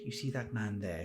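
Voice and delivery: very soft, quiet, hushed voice. Voicing a character who leans up and points out the window: very quiet voice. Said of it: "She says in a very quiet voice".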